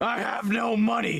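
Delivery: raspy put-on voice. Trying to replicate how Filthy Frank said it: Filthy Frank impression. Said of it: "the way that Filthy Frank said it".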